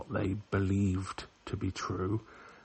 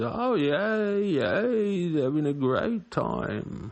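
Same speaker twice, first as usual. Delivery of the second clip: put-on slightly drunk London accent, loud and slow; 7 semitones higher, 6 dB louder than usual. Quoting a film character while watching: imitating a slightly drunk london accent. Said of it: "with his sort of slightly drunk London accent".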